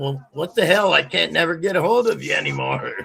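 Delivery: rough, high-pitched yelling, right out. Retelling what was yelled out while talking in sleep: imitating own yelling. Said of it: "I yelled out".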